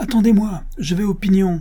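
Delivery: very high, shouted, calling out. Narrator reads a character calling after a departing carriage driver, shouted. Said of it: "cria Evelyne".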